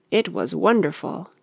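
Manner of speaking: plain reading voice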